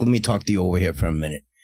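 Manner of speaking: low put-on New York wiseguy accent. Describing someone who watches The Sopranos a lot, imitating his New York accent. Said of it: "That's why he talks like a New Yorker".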